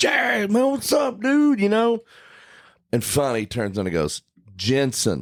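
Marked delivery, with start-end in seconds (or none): 0.0-1.6 mock shrill scream, very high-pitched. Speaker retells screaming a greeting at a man walking down the street, retelling a scream. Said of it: "So I'm still screaming".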